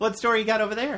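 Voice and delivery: chipper, high and bright. Show host asking the co-host about their story, chipper. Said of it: "You said that so chipper".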